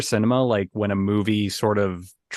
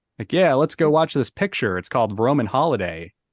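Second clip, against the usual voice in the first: fifties film mid-Atlantic accent; 4 semitones higher than usual. Showing how they talk when watching old films, in a transatlantic accent. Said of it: "when I'm doing a transatlantic accent".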